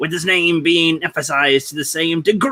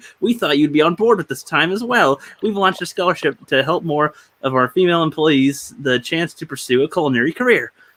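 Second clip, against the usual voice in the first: ordinary talk, nothing marked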